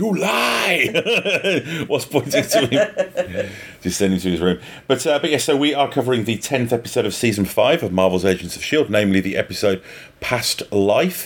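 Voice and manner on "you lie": loud bellowed shout, very high pitched. Suggesting what the other speaker should have shouted back at him, bellowing shout. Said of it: "stood up and bellowed".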